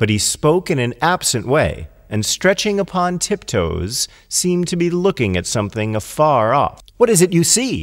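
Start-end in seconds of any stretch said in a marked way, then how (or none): 7.0-7.8 worried, eager, anxious, pitched-up delivery. The fox asks the one peering far off what he sees: anxious. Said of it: "asked the fox anxiously".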